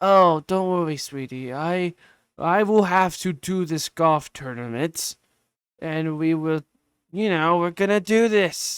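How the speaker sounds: dead flat, toneless delivery. Showing how you imagine the movie's dialogue, speak to a daughter in a terrible dead-tone Adam Sandler impression. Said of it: "It's a terrible Adam Sandler impression".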